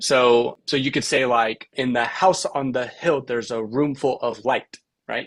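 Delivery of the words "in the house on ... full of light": sing-song anapestic rhythm, stress on every third beat. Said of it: "puts the emphasis on the last".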